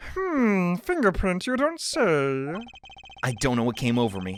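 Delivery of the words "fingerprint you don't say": silly puppet-style voice. Reading a game line aloud in a Muppet-like voice. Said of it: "I sounded like a Muppet".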